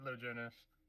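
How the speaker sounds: put-on faint child's voice, sounding distant. Voicing one of her kids answering a knock: very faint voice. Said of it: "very faint voice".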